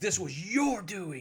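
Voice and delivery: strong, booming cry, pitched very high. Narrator voices Herod Lindsay, father of the groom, accusing the bride's uncle: booming voice. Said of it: "you hear a strong voice booming out".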